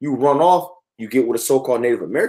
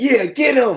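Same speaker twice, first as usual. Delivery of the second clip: acted-out, very high-pitched yell; 12 semitones higher than usual. Describing a man in the background of a picture: imitating someone yelling. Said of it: "He's yelling".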